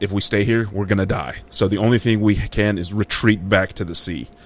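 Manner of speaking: ordinary talk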